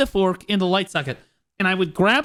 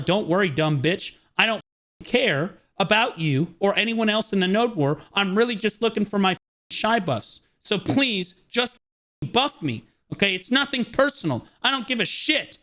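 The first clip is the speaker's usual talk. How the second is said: put-on furious, angry rant. Retelling what was said to a player who complained: retelling an angry rant. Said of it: "I had to let that demon out".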